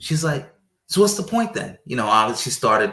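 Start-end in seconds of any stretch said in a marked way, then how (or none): 0.9-1.8 very high, agitated, riled-up voice. Retelling a partner's reply to an answer: imitating someone getting riled up. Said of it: "started getting a little riled up".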